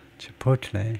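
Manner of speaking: chipotle with stress on second syllable po. Discussing how to pronounce chipotle, stress on po in chipotle. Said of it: "두 번째 실러블에 액센트를 주네요".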